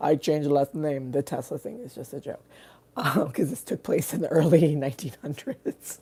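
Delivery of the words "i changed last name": put-on Russian accent. Acting out a family story, in a russian accent. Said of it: "my Russian accent".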